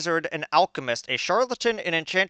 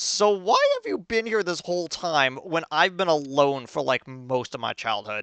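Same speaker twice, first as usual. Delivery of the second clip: ordinary talk, nothing marked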